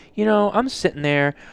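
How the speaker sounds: high-pitched, griping, complaining tone. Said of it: "he's like".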